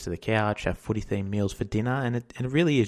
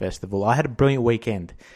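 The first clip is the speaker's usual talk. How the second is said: ordinary talk, nothing marked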